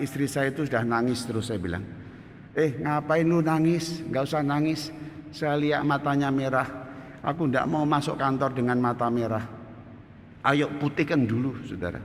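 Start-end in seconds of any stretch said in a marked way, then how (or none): none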